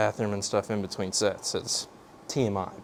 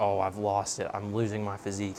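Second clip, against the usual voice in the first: usual speaking voice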